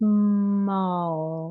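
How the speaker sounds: steady slow pace through whole word. Practicing a speaking-rate strategy, the word is said at a slow rate throughout. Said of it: "keeping that slow rate the whole time".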